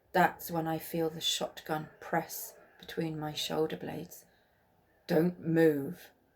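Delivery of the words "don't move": growling, woman's voice. Narrator reads a woman pressing a shotgun to the narrator's back: growling woman's voice. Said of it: "a woman's voice growls".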